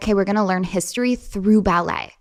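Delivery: plain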